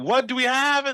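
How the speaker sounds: loud, high-pitched yelling. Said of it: "yells back".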